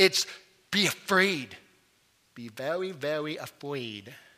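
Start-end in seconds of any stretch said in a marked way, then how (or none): 2.3-4.1 soft, hushed, silly cartoon character voice. Explaining the word phobos, say the line you feel you have to do in Elmer Fudd voice. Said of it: "I have to say it in Elmer Fudd voice".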